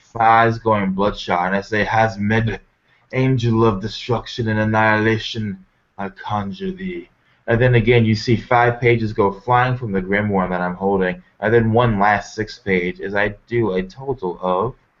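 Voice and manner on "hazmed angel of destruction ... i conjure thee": muttered, mumbled speech. The speaker's character raises a hand to a coffin and conjures an angel: muttered incantation. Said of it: "I begin to mutter once more".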